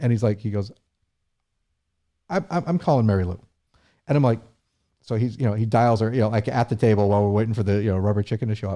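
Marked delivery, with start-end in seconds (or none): 2.3-3.4 choked-up, emotional, pitched-up stammer with repeated words. Retelling the governor making a call at the table: imitating Charlie Baker choked up. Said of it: "so he gets a little choked up".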